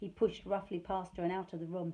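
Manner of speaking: usual speaking voice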